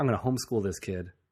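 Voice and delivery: ordinary talk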